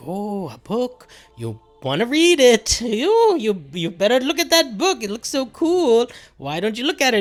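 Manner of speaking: put-on demon voice, very high and swooping. Recounting a scene where voices urge a man toward a book, demon voice. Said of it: "all of these demon voices that are like".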